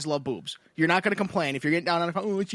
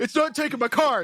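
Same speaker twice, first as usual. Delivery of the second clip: mock near-tearful complaining voice, higher; 7 semitones higher than usual. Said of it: "he's like".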